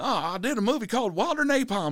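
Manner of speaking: high, jovial voice.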